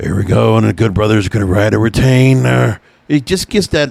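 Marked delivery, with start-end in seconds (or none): 0.0-2.8 put-on, raspy, hoarse commentator voice. Imitating a wrestling commentator calling a match: Matt Stryker raspy voice. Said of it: "he starts with that raspy voice of his".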